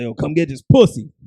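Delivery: put-on fierce, aggressive delivery. Retelling a video of a girl who couldn't say it soft: imitating someone saying it aggressively. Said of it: "she sounded mad aggressive?".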